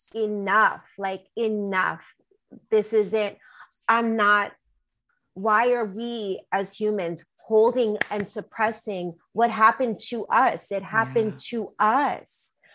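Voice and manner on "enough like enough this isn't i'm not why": plain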